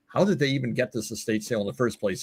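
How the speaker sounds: normal talking voice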